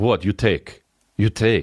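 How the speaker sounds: put-on Russian-accented man's voice. Joking about how a Russian guy makes love, voicing him: Russian guy impression. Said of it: "a Russian guy making sweet love".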